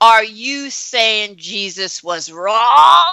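mock hollered, loud, full-voiced shouting. The speaker recounts a stranger shouting at them, retelling a shout. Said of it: "literally shouted at me".

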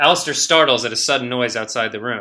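ordinary delivery

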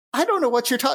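high, loud, inconsistent, slipping character voice. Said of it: "shit, I have to cover that".

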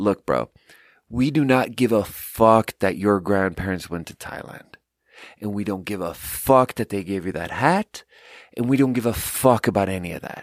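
mock deadpan tone, slightly annoyed. Retelling what a man in the front row turned and said: mock deadpan, slightly annoyed. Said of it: "in a totally deadpan, little bit annoyed, very matter-of-fact way".

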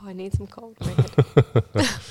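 hushed, whispered voice. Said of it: "I was like".

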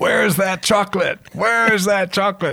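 very high, demanding yell, loud holler. Retelling someone yelling at his secretary: imitating Mister Cornell yelling. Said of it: "yelling at his secretary".

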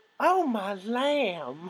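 put-on high Southern belle drawl, "lamb" stretched out. Podcast host joking about a man who will hear the episode, Southern belle voice. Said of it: "I'm fanning myself like a Southern Belle".

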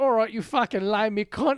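put-on Cockney accent. Retelling a face-off with the Queen, voicing her with a Cockney accent. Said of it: "the queen has a Cockney accent".

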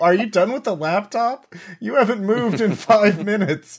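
screaming, pitched very high. Acting out what the character would scream at another: screaming. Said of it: "I would be screaming".

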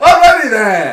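comic delivery, belted out high and loud. Complaining that an actor sounds like Ace Ventura: Ace Ventura voice. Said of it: "talking like Ace Ventura".

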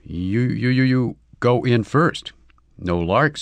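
very slow, distrustful delivery, drawing out "you". Narrator voices the other one, asked to step in first: suspicious. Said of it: "said the other suspiciously".

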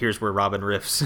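ordinary talk, nothing marked

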